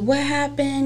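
high-pitched screaming. Retelling the mother at the police station, retelling a scream. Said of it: "screaming at the top of her lungs".

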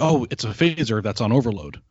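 ordinary talk, nothing marked

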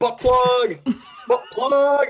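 very high, loud, drawn-out shrieking scream. Retelling what someone suddenly started screaming, retelling a scream. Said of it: "he starts screaming".

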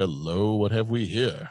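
cool, smooth, suave leading man voice. Describing spotting Billy D. Williams in a movie, in the Lando voice. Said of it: "inner monologue always has the Lando voice".

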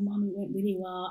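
speaking in a whisper. Retelling answering your mom's call on the bus home, whispering. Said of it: "I'm whispering on the bus".

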